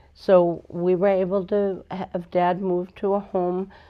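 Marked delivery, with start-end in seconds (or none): none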